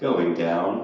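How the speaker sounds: put-on sensual, sultry, seductive voice. Imitating an elevator announcing its direction: put-on sensual voice. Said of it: "it said in a sensual voice".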